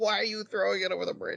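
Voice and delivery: put-on very high, screeching scream. Retelling what they screamed at a story character, retelling own screaming. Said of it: "I was screaming at him too".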